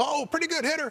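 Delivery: very high-pitched, ribbing, teasing voice. Retelling what Jackie Robinson said to the speaker's dad at the plate, high-pitched voice. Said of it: "he had kind of the high-pitched voice".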